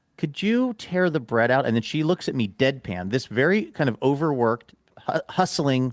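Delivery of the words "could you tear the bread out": timid, embarrassed, sheepish, small, pitched-up voice. Retelling ordering food at a counter: retelling a sheepish request. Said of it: "so I sheepishly asked".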